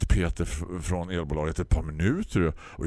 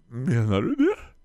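mock teary whimper, high and louder; 7 semitones higher, 4 dB louder than usual. Narrator quoting their tearful past self to Peter from the electric company: retelling a whimper. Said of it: "Kved jag".

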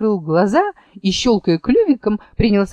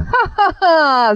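high, mocking, scoffing storybook ha-ha-ha laugh; 8 semitones higher than usual. Charus laughs at what Vulpicula has just said; laughing. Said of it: "засмеялась Чарус".

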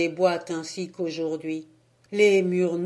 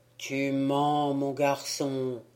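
solemn, serious, grave, low-pitched voice; 5 semitones lower, 3 dB quieter than usual. A village priest questions a boy about where he comes from: grave, serious voice. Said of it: "me dit d'une voix grave".

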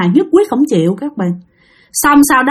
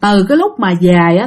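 ordinary talk

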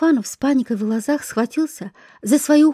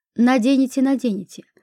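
plain

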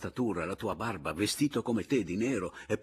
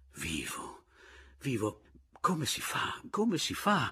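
slow, dazed, delirious, almost raving repetitive lament; 4 semitones higher than usual. Pomino, scratching his forehead, speaks to the narrator: almost raving. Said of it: "si grattava la fronte e diceva, quasi vaneggiando".

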